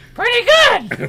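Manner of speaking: very high, very loud cartoon voice. Answering a greeting as Toad, in a Toad voice. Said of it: "pretty good impression of their impression of Toad".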